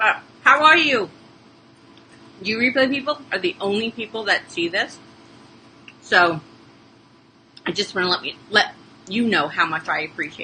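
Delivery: speaking while chewing, mouth full. Speaker thanking replay viewers, talking while chewing. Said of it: "let me finish what I'm chewing".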